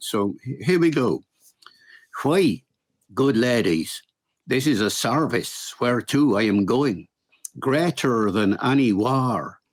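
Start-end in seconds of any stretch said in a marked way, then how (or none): 2.2-9.5 early modern English original pronunciation accent. Showing how a Shakespeare quote sounds in Shakespearean original pronunciation. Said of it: "here's that quote again for for today in O P, as we call it, in original pronunciation".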